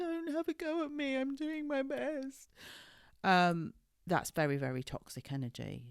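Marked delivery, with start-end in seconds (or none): 0.0-2.5 very high, weepy, tearful crying. Imitating a parent who plays the victim: imitating a crying parent. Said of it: "they were crying and going".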